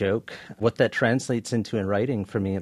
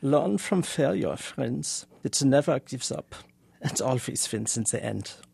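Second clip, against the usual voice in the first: German accent, a touch higher in pitch; 5 semitones higher than usual. Asked to put on the accent, perform the line in a put-on Adorno accent. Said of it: "put on your Adorno accent".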